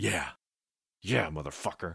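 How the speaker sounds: muttered through clenched jaw and gritted teeth. Narrator voicing a man as the bass thumps, muttered through gritted teeth. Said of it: "he muttered through gritted teeth".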